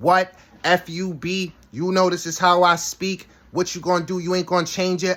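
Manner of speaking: high-pitched, heated, defiant, angry going-off. Retelling a woman going off on her friend: imitating someone going off. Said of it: "she went off on her friend".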